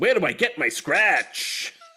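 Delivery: put-on old-time 1930s New York cab driver accent. Playing a character who is a cab driver: 1930s New York cabbie accent. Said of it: "I'm a cab driver from the New York of the thirties".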